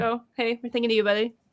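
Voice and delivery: ordinary talk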